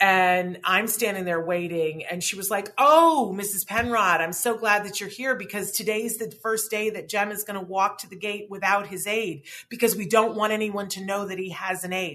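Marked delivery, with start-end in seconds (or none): none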